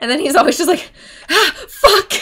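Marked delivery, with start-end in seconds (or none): 1.3-2.1 put-on, freaked-out, high, panicked burst. Retelling the boyfriend's reaction to going to the hospital: imitating a freaked-out curse. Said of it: "he freaks out".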